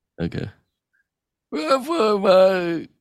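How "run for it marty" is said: shouting wacky scientist voice, pitched much higher. Coached to try shouting, doing a shouted Christopher Lloyd impression. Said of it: "try shouting and like kind of like pretend".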